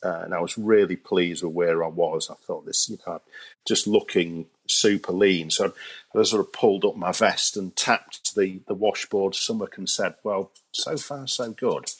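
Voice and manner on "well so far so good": tongue-in-cheek, cheeky, sarcastic tone. Retelling own reply while tapping the stomach: retelling a cheeky sarcastic remark. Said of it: "that sounded like I was being a, a little bit cheeky and sarcastic".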